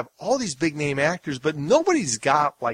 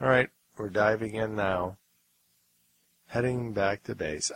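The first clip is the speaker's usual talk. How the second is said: deadpan, uninvested, flat, understated monotone; 6 semitones lower, 5 dB quieter than usual. Describing an actor's early role, the speaker imitates his line: monotone delivery. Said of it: "he just was so monotone".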